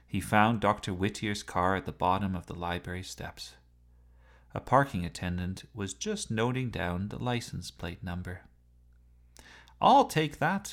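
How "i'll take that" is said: sudden, very high, loud shouted call. A man in a hurry takes a page from a parking attendant, shouted. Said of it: "shouted Gordon".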